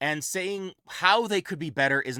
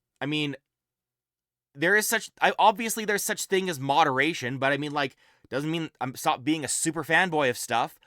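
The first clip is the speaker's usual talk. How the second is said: ordinary talk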